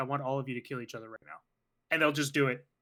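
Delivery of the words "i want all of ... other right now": put-on calm delivery. Speaker describes a character walking into a police precinct, imitating a calm voice. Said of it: "go in a pretty calm voice".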